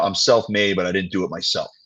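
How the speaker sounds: ordinary talk, nothing marked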